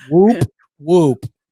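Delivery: booming masculine whoop. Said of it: "That was a very masculine whoop".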